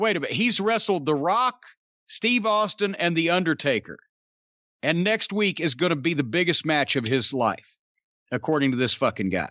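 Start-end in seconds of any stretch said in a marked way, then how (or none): none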